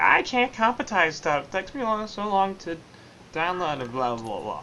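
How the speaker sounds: bouncy, swooping, up-and-down sing-song delivery. Quoting a co-caster's complaints in a Stu impression. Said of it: "That's pretty much a spot-on uh, impression of Stu".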